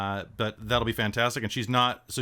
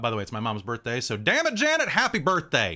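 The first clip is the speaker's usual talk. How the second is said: put-on swooping Kansas accent. Giving an example of a Kansas accent by imitating an uncle: Kansas accent. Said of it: "my uncle kinda talks like this".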